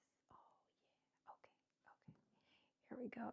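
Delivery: very quiet, hushed whisper. Focusing while putting a piece together, whispering. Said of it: "I don't know why I'm whispering".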